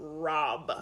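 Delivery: low, macho voice. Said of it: "Yours is pretty bad too".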